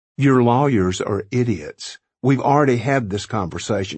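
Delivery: ordinary delivery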